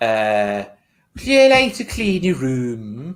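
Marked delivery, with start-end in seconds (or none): 1.1-3.2 put-on Irish accent, pitched up, "room" drawn out. Asked to do an Irish accent telling someone to clean their room: Irish accent. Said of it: "Irish accent. Tell me to clean my room".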